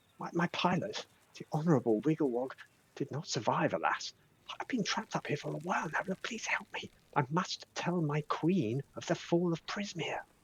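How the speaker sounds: slow, high, loud stage whisper. Voicing a trapped character calling down for help: loud whisper. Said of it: "it's kind of like a loud whisper".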